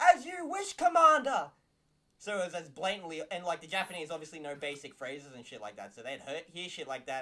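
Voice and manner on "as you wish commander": put-on loud speech, higher and louder. Retelling soldiers answering a commander they didn't like: imitating loud talking. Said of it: "they'd talk really loudly and be like".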